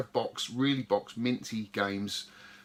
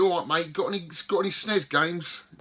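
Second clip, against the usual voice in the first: laid-on put-on Cockney accent, raised and pitched-up; 7 semitones higher, 5 dB louder than usual. Retelling talking to the man behind a retro game store counter, put-on cockney accent. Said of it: "I put on a real Cockney accent".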